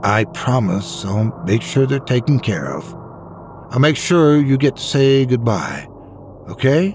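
plain reading voice

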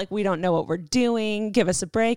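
ordinary talk, nothing marked

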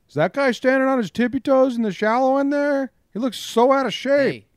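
very high, loud megaphone-style announcement, calling out. Speaker pictures a lifeguard calling out over the pool: lifeguard on a megaphone. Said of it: "I pictured the lifeguard with a megaphone saying that".

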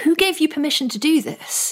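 taken-aback, scandalised, quite shocked tone. Retelling what a scholar asked after a talk: imitating Gillian Beer's shocked tone. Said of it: "sort of in quite shocked tones".

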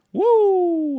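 very loud, drawn-out woo at full blast. Reading out a listener's weekend picks record, with a Ric Flair woo. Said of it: "I read that in like a Ric Flair tone".

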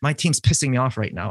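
ordinary delivery

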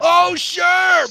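high, loud yelling and screaming rant.

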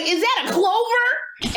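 put-on tipsy voice, high and slow.

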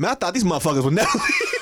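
casual everyday man voice.

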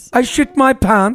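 British accent done for laughs. Trying out the most disgusting thing to say in an accent; mock british accent. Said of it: "most disgusting thing I would say".

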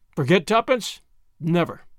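ordinary delivery

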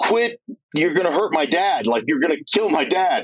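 acted, high-pitched voice on the verge of tears. Retelling a daughter at the gym pleading with the trainer: imitating someone near tears. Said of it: "literally almost in tears going".

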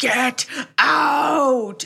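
high, possessed-sounding demonic shriek. Retelling a haunted-house story, quote the voice yelling at Father Delaney: demonic scream. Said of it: "a demonic voice screams".

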